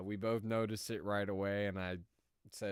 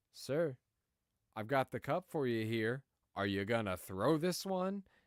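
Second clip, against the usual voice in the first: put-on firm, no-nonsense, pretty stern, pointed tone; 4 semitones higher, 3 dB louder than usual. Retelling own reply to an angry customer at the counter: stern tone. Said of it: "pretty stern".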